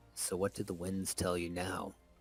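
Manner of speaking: whispered character voice. Game narrator voices Pang Day leaning toward Daiyu, Pang Day whispering. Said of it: "leans towards Daiyu and whispers".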